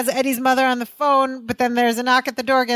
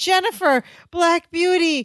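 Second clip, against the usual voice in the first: mock eager, excited calling out, high-pitched; 6 semitones higher than usual. Retelling a sitcom scene, Larry seeing his bike: imitating Larry calling out excitedly. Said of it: "Larry runs over to them excitedly".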